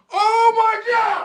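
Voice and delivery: high, wild yelling. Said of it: "You're yelling at it".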